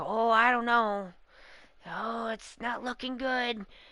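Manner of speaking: downcast, worried, gloomy, doubtful hedging tone. Imitating a chef who always doubts his chances: imitating Shin-san's gloomy doubt. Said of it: "Shin-san is usually just like".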